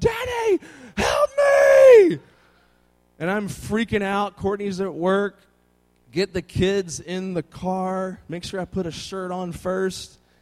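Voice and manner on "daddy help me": put-on high, loud child's scream. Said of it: "And he's just like".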